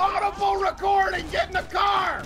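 urgent yelling.

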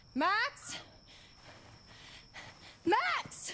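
very high-pitched, insistent calling out. Calling out for Max, who then asks why; shouting. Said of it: "why are you shouting?".

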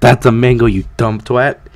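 ordinary delivery

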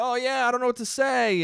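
acted awkward, anxious delivery. Acting out an anxious person at a party: acting out an awkward anxious person. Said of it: "He might awkwardly be like".

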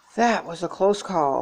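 ordinary delivery

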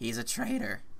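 cracked, breaking voice. Reading a game character's line aloud, voice cracking. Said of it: "My voice cracked right there".

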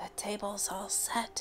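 hushed whisper, under the breath. She whispers after setting the pie on the stump; whispered. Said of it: "she whispered".

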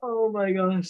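laughing while talking. Reading out a fire-making challenge result, laughing while talking. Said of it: "I can't stop laughing".

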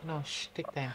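soft, hushed, pleading whispered shush.

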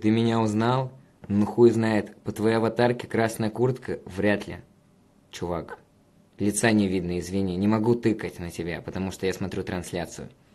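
normal talking voice

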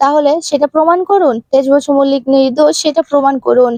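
ordinary delivery

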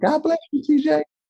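put-on high-pitched voice. Retelling what a man said to him, in a high-pitched voice. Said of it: "And he has a high-pitched voice. He's like".

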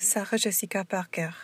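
French pronunciation. Showing how French speakers say American names: French accent. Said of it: "spoke American names in a fully French accent".

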